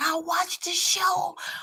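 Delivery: high, slow worried voice. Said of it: "she was like".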